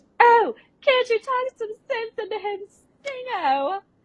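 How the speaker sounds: very high, loud stage yell. Reenacting an actress rerunning her stage line, yelling it even louder. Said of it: "she just yells it even louder".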